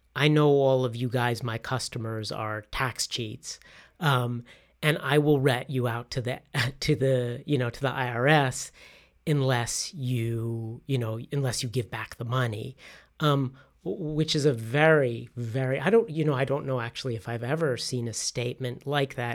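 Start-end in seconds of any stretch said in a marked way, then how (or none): none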